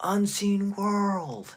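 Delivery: very high-pitched, loud shouted yell. Retelling calling out at a show: retelling own yell. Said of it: "And I yell out".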